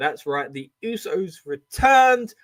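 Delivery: emotional voice crack. Recapping the mystery tag partner reveal, voice cracking with emotion. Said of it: "A little bit of a voice crack".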